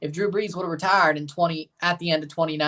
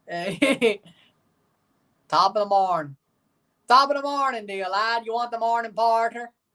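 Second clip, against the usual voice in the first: high-pitched put-on stage Irish brogue; 6 semitones higher than usual. After one try, the speaker gives his best Irish accent again. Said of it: "Best Irish accent".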